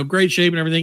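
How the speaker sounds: ordinary talk, nothing marked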